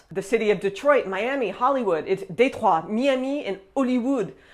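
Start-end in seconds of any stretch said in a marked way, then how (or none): 2.1-4.3 speaking with a French accent. Showing listeners how to say English place names, in a French accent. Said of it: "say them with a French accent".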